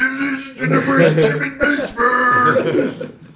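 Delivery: very high-pitched, shrill screaming voice. Retelling a fan behind home plate heckling the team: imitating a fan screaming. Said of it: "this guy behind home plate was screaming".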